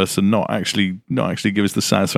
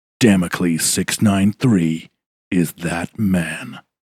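theatrical, dramatic announcer delivery. Introducing a game character to the group, in a dramatic voice. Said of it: "I just can't do it that dramatic".

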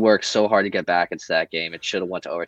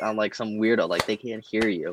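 ordinary talk

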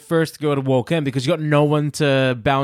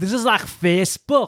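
put-on Scottish accent, higher pitch; 3 semitones higher than usual. Quoting a contestant's saying: imitating her in a Scottish accent. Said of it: "that was my Scottish".

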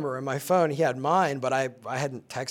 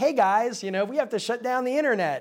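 put-on, very high, raised voice; 9 semitones higher than usual. Speaker retelling someone playing him on a show, raised voice. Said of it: "he's kind of raising his voice".

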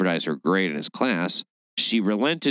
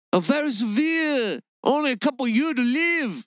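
put-on Chinese accent, higher pitch. Retelling what the man in the story said to her: imitating Haney Pham. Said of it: "That's how he sounded".

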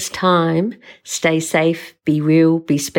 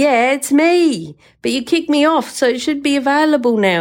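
put-on yelling, voice pushed up high; 9 semitones higher than usual. Retelling being refused the Mad Mumsy username: retelling own yelling. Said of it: "And I'm yelling at the computer going".

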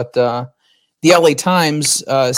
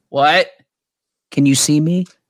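put-on confused, clueless mother voice. Imitating the speaker's mom on a Skype call, clueless mom impression. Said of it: "This is my mom".

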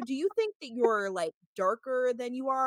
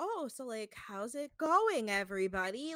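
mock very slow, clueless, innocent voice; 5 dB quieter than usual. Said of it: "when men play dumb like that".

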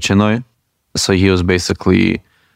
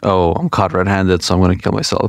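plain

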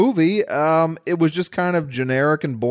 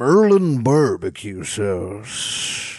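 low, deep movie-trailer announcer voiceover; 6 semitones lower than usual. Retelling a movie's opening where the actor reads an ad: imitating Sam Elliott doing voiceover. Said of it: "you get the treat of him going like".

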